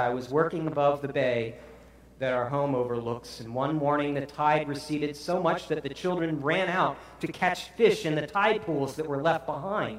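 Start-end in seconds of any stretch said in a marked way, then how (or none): none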